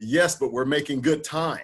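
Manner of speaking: put-on proud, confident tone. Retelling the lumberjacks answering their foreman: imitating a proud reply. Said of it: "respond to him proudly saying".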